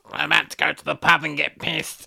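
flat, creaky, droning robot voice. Retelling a scene where Ilia returns as a robot with a voice box: Ilia robot voice-box voice. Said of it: "now she's a robot with a voice box".

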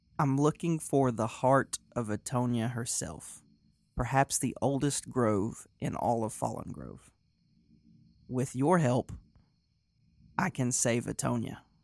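very calm, even delivery. Voicing a character who asks the sage for help: speaking very calmly and slowly. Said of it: "very calmly and slowly".

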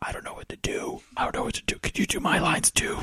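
soft, whispered pleading under the breath. Retelling what a person on stage said to you, in a kind of whisper. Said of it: "And kind of whispers".

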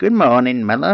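high, wet, watery-sounding creature voice. Narrator voicing a character greeting the miller in the morning, in a watery voice. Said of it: "he said in a watery voice".

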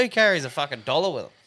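ordinary talk

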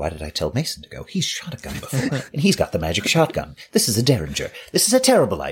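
high, muttered talking to oneself. A player's character sights in a derringer at a creature, muttering to oneself. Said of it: "I'm sighting in and I'm muttering".

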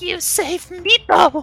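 gasping high creature voice. Narrator voicing Meepo right after the players save him, gasping Meepo voice. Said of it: "Meepo gasps out".

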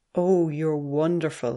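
low murmur. A woman reaching out and touching a man, murmured. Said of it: "she murmured".

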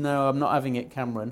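ordinary talk, nothing marked

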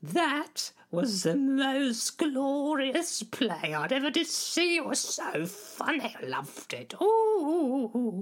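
very high, unhurried, stately voice, long stretched ooh. Imitating the Queen praising a play: imitating the Queen's voice. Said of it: "I'll do her voice".

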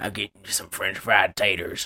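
very low, deep put-on character voice. Imitating a movie extra the speaker found creepy: Billy Bob Thornton Sling Blade voice. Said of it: "He was like Billy Bob Thornton in Sling Blade".

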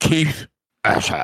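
spit-filled, hard-to-enunciate words. Repeating a character name for another player, mouth full of spit. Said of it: "my mouth is like, it's full of spit".

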